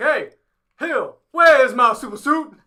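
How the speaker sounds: very loud, high shout. Pitching a Marvel movie idea, doing Samuel L. Jackson as Nick Fury. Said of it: "And then he's just like".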